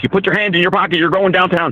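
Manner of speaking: mock furious, high, angry cop shouting. Retelling a DWI check where a cop yelled at the speaker: imitating a cop yelling. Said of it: "the cop starts yelling at me like".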